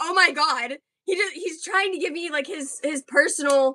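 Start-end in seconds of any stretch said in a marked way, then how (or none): 0.0-0.8 acted panicked voice, higher. Retelling being next to someone, imitating own freaking out. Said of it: "tweaking out".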